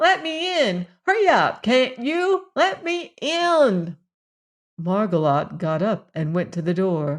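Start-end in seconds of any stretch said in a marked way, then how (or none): 0.0-4.0 piercing, shrill, high cat-like cry. Narrator voices someone scratching at the back door, shrill crying voice. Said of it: "a shrill voice cried".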